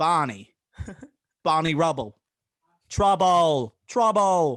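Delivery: booming, very loud, very slow and drawn-out. Retelling a favorite movie line: Don Cheadle impression. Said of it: "He's like".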